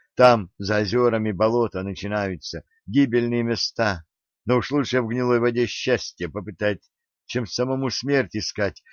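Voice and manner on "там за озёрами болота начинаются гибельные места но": plain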